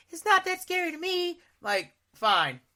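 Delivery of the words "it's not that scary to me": very high woman's voice. Quoting someone not scared of Dracula or the werewolf: impression of another woman. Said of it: "I think I did a good impression of her".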